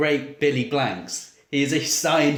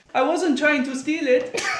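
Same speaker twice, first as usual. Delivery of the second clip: put-on very high, squeaky childlike voice; 12 semitones higher than usual. Retelling a film scene where the child stands up before the master: Jean-Claude Van Damme doing a child's voice. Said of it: "pretending to do the voice of a child".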